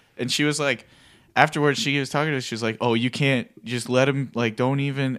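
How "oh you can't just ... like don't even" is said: ordinary talk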